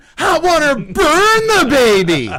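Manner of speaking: very high-pitched, shrill, loud comedic voice. Showing how the caller said the name: Adam Sandler Hot Water Burn Baby voice. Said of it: "The way he's saying Joshua is".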